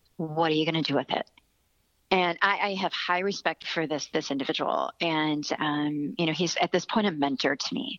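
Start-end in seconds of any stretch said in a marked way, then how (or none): 0.2-1.3 put-on sternness, much faster. Quoting a mentor who looked at the speaker and asked this, mock-stern. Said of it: "he very sternly said".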